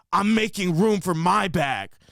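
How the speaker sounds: hostile, combative, angry, aggressive tone. Retelling a plane argument, the speaker quotes a man: imitating an angry man. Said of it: "Like so angry".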